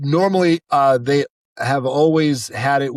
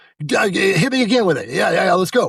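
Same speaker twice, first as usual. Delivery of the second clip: thrilled, excited, fast, pitched-up egging-on tone; 5 semitones higher than usual. Retelling a recording session, imitating an excited director. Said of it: "the director got real excited about that take".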